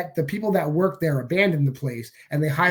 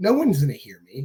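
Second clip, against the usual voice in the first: ordinary talk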